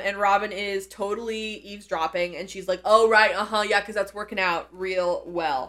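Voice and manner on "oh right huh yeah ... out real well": ordinary talk, nothing marked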